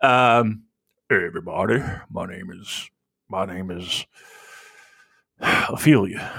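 put-on low female voice. Showing how a lady's voice on the podcast should sound instead: deep lady's voice. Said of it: "a deep voice".

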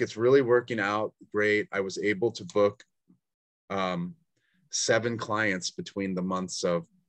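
ordinary delivery

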